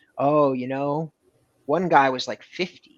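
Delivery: put-on casual, offhand young salesman's tone. Retelling what a young seller answered when asked about his oldest lead: imitating the young seller's tone. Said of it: "he said it in exactly that tone".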